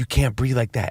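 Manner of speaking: mock yoga-instructor voice. Retelling what a yoga instructor said to them, imitating a quiet yoga voice. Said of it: "She's talking quietly. They all have their yoga voice".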